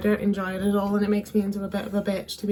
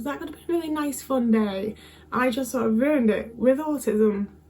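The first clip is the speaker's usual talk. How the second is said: tearful voice, on the edge of tears; 4 semitones higher than usual. Speaker regretting being rude on a day out: tearing up. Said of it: "I'm kind of tearing up a bit".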